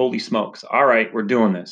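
ordinary delivery

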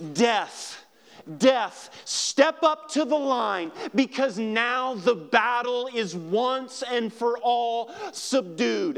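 defiant, challenging battle yell. Preaching, acting out what was yelled at death from the tomb: retelling a yell. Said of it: "he was yelling".

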